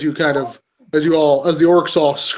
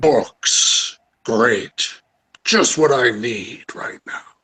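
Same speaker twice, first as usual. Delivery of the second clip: deep, slow, monstrous undead dragon voice; 4 semitones lower than usual. Voicing a dracolich annoyed by cheering orcs: Dracolich voice. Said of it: "a Dracolic pulls itself out from the ground".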